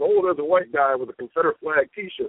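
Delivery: plain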